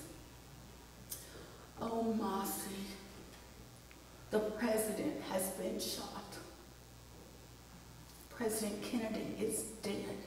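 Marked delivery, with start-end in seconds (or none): 1.8-10.2 soft, hushed put-on voice. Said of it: "she really talked like this".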